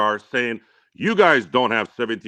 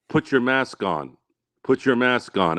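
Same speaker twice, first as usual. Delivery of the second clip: measured, restrained tone, said twice. Retelling a lady asking him to put a mask on: imitating a quiet voice. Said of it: "she was doing it in a quiet voice".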